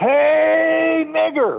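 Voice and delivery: put-on very high, drawn-out shouting yell. Telling a story about a fan high in the stadium bleachers, retelling a yell. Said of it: "he stands up and he yells".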